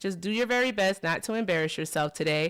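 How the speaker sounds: normal talking voice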